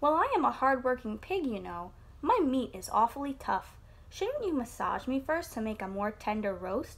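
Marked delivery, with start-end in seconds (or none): none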